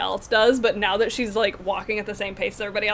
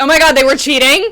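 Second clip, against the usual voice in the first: very loud, high-pitched shocked outburst; 5 semitones higher, 12 dB louder than usual. Reenacting their reaction on hearing the others cheated, retelling a loud shocked exclamation. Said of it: "very loudly".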